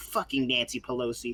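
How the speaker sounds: plain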